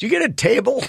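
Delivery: high, eager voice.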